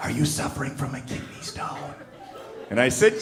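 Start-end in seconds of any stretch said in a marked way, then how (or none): 0.0-1.9 soft, hushed whisper. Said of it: "she whispers in my ear".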